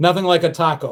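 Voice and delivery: normal talking voice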